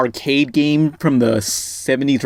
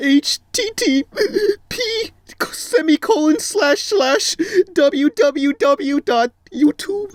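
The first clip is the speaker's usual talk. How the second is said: mock tearful blubbering, very high, sobbing cry. Retelling how a creator spelled a link, imitating someone crying. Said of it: "he's just crying".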